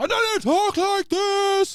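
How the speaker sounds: very high, shrill, booming, loud, drawn-out announcer voice. Imitating an announcer who switches voices mid-sentence: imitating Vince's switched announcer voice. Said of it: "he'd go from talking a little bit like this".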